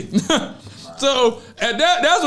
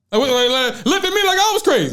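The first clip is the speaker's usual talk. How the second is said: ordinary talk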